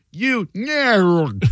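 fake high voice with the word nerd drawn out. Retelling an edited clip where a man's insult is redubbed, in fake Spicoli voice. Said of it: "the fake Spicoli voice says".

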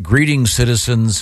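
ordinary talk

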